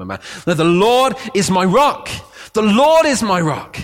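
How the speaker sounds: emphatic, drawn-out, slow, swooping shout. Speaking to listeners he calls family, demonstrating how he sometimes says it: shouting. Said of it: "And this is sometimes how I'm shouting".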